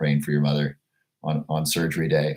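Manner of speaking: usual speaking voice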